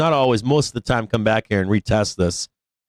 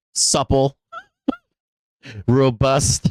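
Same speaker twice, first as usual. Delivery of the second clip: mocking, sarcastic, swooping sing-song delivery. Speaker previewing verbiage to listen for, sarcastic. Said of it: "I'm being sarcastic right now".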